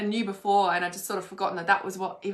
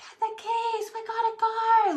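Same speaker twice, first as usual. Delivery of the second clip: play-acted, very high, very slow, drawn-out screaming. Retelling an urgent call to get the keys and go: imitating own screaming. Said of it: "screaming, I'm like".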